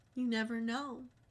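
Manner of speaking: put-on, sinister tone of voice. Retelling what a doctor said at a visit: imitating a sinister doctor. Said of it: "She sounded so sinister".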